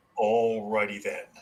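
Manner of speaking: zany cartoon character voice. Asked to get an announcer voice ready, speaker offers an Ace Ventura voice. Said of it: "that's the uh, Ace Ventura voice".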